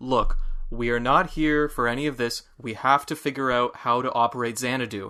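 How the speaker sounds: ordinary delivery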